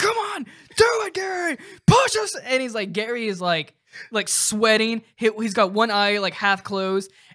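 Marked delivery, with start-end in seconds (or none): 0.0-2.3 play-acted shrill very high yelling coach voice. Retelling a SpongeBob clip where he yells at Gary: imitating SpongeBob yelling. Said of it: "yelling at Gary".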